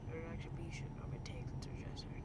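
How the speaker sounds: whispered, unvoiced.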